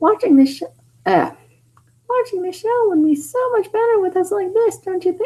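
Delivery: very high, little cartoon mouse voice. Reading a character's line in a story, in a Minnie Mouse voice. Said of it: "why did I turn her into Minnie Mouse?".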